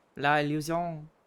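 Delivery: put-on French accent. Joking about a word's pronunciation: french accent. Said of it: "If we're saying with a French accent".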